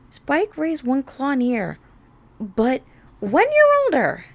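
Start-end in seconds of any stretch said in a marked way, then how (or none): 2.4-4.1 yelled loudly. Twilight yells back to Spike while opening the door, yelling. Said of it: "Twilight yelled".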